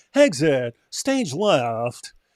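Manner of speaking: old-time cartoon voice, swooping pitch, left drawn out. Explaining a line reading that recalled an old cartoon, Snagglepuss voice. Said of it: "reminded me of uh, Snaggletooth when he would go".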